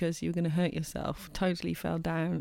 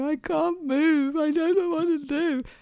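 put-on very high, loud, slow, tearful crying wail; 10 semitones higher, 8 dB louder than usual. Acting out a skier stuck on a mountainside: imitating someone crying. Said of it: "stand on the side of a mountain crying".

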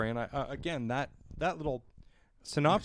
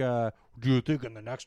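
put-on dim, dopey-sounding dumb voice; 3 semitones lower than usual. Describing people leaving the theater, the speaker imitates them in a dumb voice. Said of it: "I don't mean to do a dumb voice".

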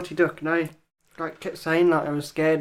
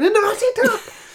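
put-on shrill, terrified shriek, very high and loud; 5 dB louder than usual. Retelling screaming as a child when a character appeared: imitating a scream. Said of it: "I started screaming".

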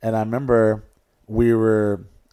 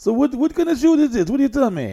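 put-on Italian accent, much higher, faster; 14 semitones higher than usual. Telling a story about a show, quoting this guy in a put-on Italian accent. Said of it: "that was Italian, voice. That was my attempt".

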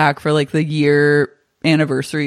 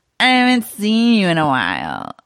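put-on drunk slur, words smeared together; 5 semitones higher than usual. Recapping a scene where Kara sidles up to Max at the bar, imitating Kara's drunk slurring. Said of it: "She's slurring".

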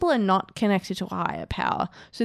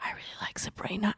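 put-on whisper, quieter; 12 dB quieter than usual.

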